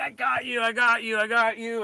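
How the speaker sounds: elated, triumphant, excited repeated exclamation. A speaker retells screaming while filming lights with a phone, retelling excited screaming. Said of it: "I'm screaming like".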